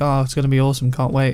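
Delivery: ordinary delivery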